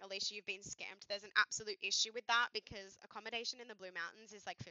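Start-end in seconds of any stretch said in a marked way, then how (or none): none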